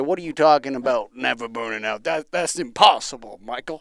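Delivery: put-on Southern American twang accent. Imitating some guy at a convention scoffing at the claim: southern accent impression. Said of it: "some guy with a southern accent say".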